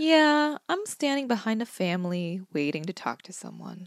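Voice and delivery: defeated, resigned, unfrantic tone. Retelling a phone call with a stranded friend, imitating someone sounding defeated. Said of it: "You just sound so defeated".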